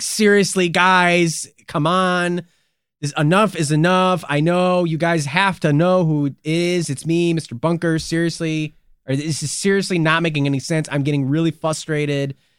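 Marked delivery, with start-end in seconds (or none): none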